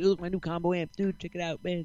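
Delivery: all-excited gushing. Retelling a guitar player showing off his new amp at a gig, imitating an excited guitarist. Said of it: "He's all excited".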